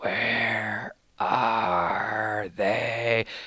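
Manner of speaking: put-on eerie, creepy, hushed half-whisper. Imitating the half-whispering figures in a new trailer, in a creepy half-whisper voice. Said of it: "a creepy whisper voice".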